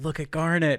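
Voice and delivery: put-on whisper. Retelling a scene where a character whispers to another: whispering like Amethyst. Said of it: "Amethyst whispers to Pearl".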